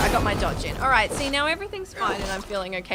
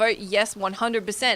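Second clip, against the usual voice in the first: ordinary delivery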